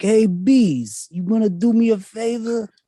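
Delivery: put-on very high Italian mobster accent, "bees" stretched out. Improvising as Joe Pesci hiring a bunch of bees, Joe Pesci impression. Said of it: "Apparently we've decided on Italians".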